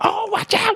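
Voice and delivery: very high, urgent, loud yell. Describing yelling at the screen while watching movies; retelling a yell at the screen. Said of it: "yelling at the screen".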